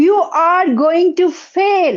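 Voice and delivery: loud, screaming voice. A speaker voicing the inner voice that screams at you, screaming. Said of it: "Sometimes it screams".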